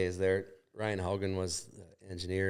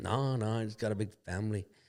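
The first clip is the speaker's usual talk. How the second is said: imitated radio DJ voice.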